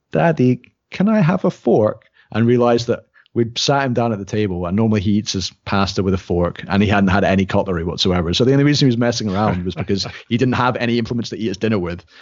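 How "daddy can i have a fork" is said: put-on sweetest little-boy voice, very high and drawn out. A parent retelling how a child asked at dinner, imitating a child's sweetest voice. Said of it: "the sweetest voice".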